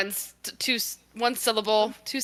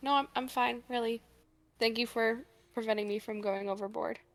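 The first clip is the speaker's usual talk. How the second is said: very quiet, hushed, almost under the breath; 2 semitones higher, 8 dB quieter than usual. A player's character, calming from sobs, answers Odess and Pearl, very quiet. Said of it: "like very quietly".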